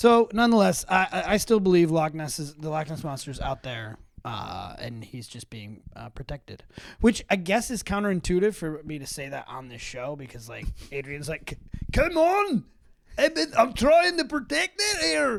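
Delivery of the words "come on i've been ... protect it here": very high, bad put-on Scottish accent. On a show, voicing Adrian's objection in a bad Scottish accent. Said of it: "my Scottish accent sound like I'm trying to say words backwards".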